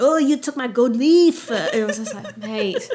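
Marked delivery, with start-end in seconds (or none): 0.0-1.5 loud, exaggerated, over-the-top put-on French accent. Retelling a scene, the speaker acts out a man accusing a woman of stealing, in a put-on French accent. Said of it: "the French accent really popped off then".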